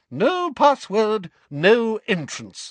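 haughty, lofty, very high, drawn-out tone. Narrating a portrait speaking to someone who lacks the new password: lofty. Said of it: "she said loftily".

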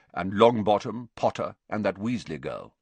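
ordinary talk

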